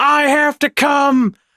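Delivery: very slow, drawn-out, stretched-out screaming. Telling a story, the speaker acts out what a man screamed at them, retelling a scream. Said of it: "and he's like screaming it".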